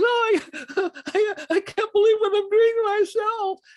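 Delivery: very high, tearful, stammering, stumbling weeping. Retelling a tough brother's words while he wept: imitating someone weeping. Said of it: "He's just weeping".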